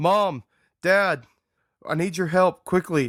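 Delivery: high-pitched, loud screaming. Voicing a character running into the house: screaming for help. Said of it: "I'm screaming for my dad and my m-, mom".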